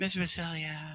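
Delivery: very soft, quiet, soft-spoken voice. Retelling how a high school student first greeted him: imitating Chris's soft talking. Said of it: "He was real soft talking".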